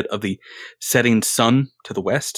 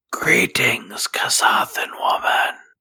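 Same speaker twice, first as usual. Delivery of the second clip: hushed whisper. Greeting a Kasathan woman in character: whispering. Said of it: "I'm trying to whisper".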